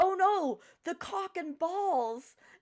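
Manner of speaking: very high, very loud, stretched-out yell. Retelling what a coworker yelled: imitating Liam yelling. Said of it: "he yells".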